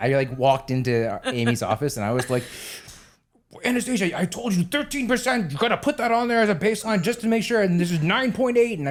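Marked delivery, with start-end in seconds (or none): 3.6-8.8 high, fast, loud, scolding rant. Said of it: "I fucking lost my bananas about that".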